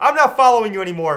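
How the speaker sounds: loud, furious, angry voice.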